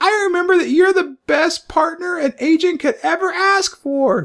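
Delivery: very high-pitched, loud character voice. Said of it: "She's like".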